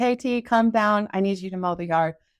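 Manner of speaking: ordinary talk, nothing marked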